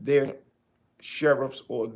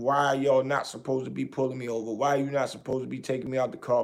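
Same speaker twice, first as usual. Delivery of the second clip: plain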